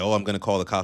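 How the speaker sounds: plain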